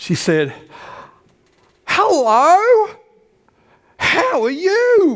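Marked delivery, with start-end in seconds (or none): 1.9-5.2 shrill, booming, very loud, very slow, "you" stretched long. Retelling a woman greeting him in a pharmacy: imitating a very loud voice. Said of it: "Like that".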